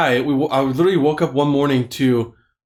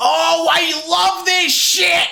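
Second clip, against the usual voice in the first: very high, very slow, full-lunged scream. Retelling what a man outside the open window screamed: imitating a man screaming. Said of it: "this guy was screaming at the top of his lungs".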